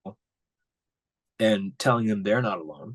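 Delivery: getting emotional, voice choked. Quoting a grieving father's words about his son: getting emotional. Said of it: "I'm getting emotional right now".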